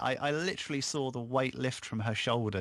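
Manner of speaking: ordinary delivery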